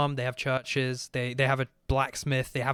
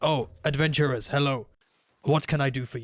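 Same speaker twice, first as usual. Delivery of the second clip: thick, heavily put-on orc character voice. Narrating a game, the speaker voices an orc greeting adventurers, orcish voice. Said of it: "he talks in a very orcish way".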